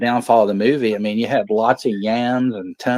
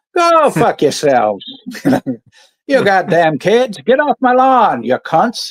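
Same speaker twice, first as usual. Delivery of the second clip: put-on leprechaun voice, higher and louder; 8 semitones higher, 5 dB louder than usual. Playing a made-up character introducing himself: leprechaun voice. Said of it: "You sound like a leprechaun".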